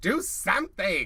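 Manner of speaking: loud, slow mock yell.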